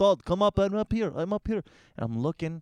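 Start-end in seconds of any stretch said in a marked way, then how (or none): 0.0-1.1 put-on Russian accent, much higher. Retelling how a woman called down to him, imitating a russian accent. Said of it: "It's because she was Russian".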